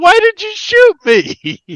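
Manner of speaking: acted very high, very slow, swooping drawn-out shriek. Retelling a video of a shot man falling down: imitating someone screaming. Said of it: "falls down screaming like a little girl and goes".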